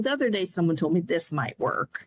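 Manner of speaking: fast, fed-up, put-upon, exasperated delivery. Explaining how tone can sound coercive, demonstrating a line: exasperated tone. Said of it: "if I use that exasperated tone".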